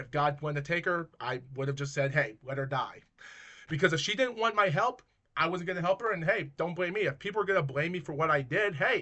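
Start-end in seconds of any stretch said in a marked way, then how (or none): none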